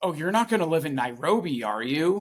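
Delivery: put-on terrified voice. Telling how an aunt reacted in front of the whole family, imitating a terrified aunt. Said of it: "like she was so terrified".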